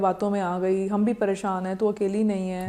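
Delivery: plain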